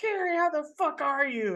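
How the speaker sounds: put-on brash, obnoxious, super loud, very high-pitched voice. Describing a character greeting Carrie, imitating someone super loud. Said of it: "she's just like super loud and kind of obnoxious".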